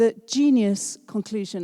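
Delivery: ordinary talk, nothing marked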